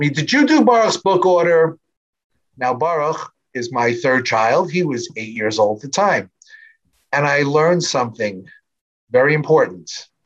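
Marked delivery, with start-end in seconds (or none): 0.1-1.8 high, raised, called-out voice. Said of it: "my wife from the second floor yells down to me".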